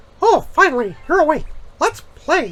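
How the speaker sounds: cartoon mouse character voice, very high-pitched. Showing off impressions, the speaker tries a Mickey Mouse voice. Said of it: "let's try this into Mickey Mouse".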